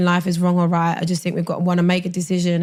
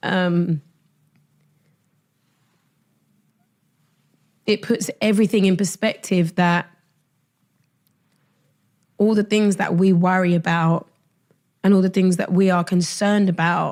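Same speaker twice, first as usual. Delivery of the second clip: tearful, crying speech. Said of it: "even me crying like this".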